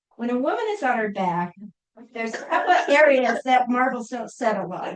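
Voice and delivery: ordinary talk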